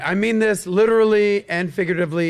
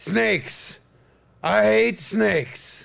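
growly, rough, gruff wrestling-promo voice; 3 semitones higher than usual. Trying out one of several possible lines, in a wrestler voice. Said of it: "Sounds like a wrestler".

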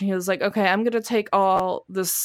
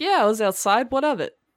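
nonchalant, unbothered, couldn't-care-less cat voice; 3 semitones higher than usual. Voicing the cat strolling in like nothing happened: unbothered cat voice. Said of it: "like nothing happened".

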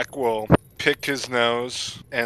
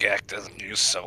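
whisper, much quieter; 3 semitones lower, 5 dB quieter than usual. A tabletop player's character whispers to the person next to them; whispering quietly. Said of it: "I whisper quietly to the person next to me".

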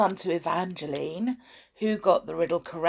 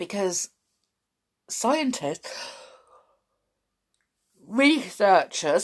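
speaking through a yawn, slower; 2 semitones higher than usual. Introducing a fun fact, yawning while talking. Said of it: "I'm yawning as well as coughing".

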